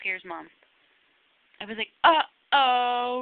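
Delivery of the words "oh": very loud, startling, booming delivery. Retelling saying uh-oh to scare Mom: imitating own loud uh-oh. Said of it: "really loud".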